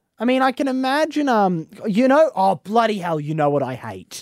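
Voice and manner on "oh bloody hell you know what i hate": irritated, fed-up, angry outburst. Breaking off mid-sentence to start a complaint, sounding angry. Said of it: "Sorry, that sounded angry".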